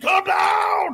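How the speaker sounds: very high, panicked, frantic screeching shout. Describing a store video where a man loses it, imitating someone screaming. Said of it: "And he's screaming".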